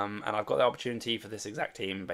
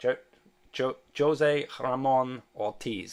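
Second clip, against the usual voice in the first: very slow, drawn-out, careful attempt at Spanish accent; 4 semitones higher, 4 dB louder than usual. Saying a chat member's name before signing off, in a spanish accent. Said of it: "that's my best Spanish accent".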